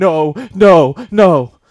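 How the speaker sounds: frantic, panicked, very loud outburst. Retelling calling her mom after a bad day, imitating mom freaking out. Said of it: "and then she starts freaking out".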